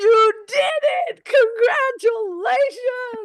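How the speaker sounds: very high, loud, slow, gleeful cheer.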